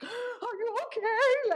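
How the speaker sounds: play-acted, very high, sobbing hysterical crying. Retelling grabbing the phone in a panic: imitating own hysterical crying. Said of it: "I'm literally hysterically crying".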